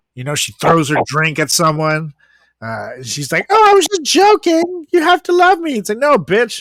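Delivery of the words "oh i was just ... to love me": very high, shrill, loud, grating, annoying voice. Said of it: "she has the most annoying voice in the world".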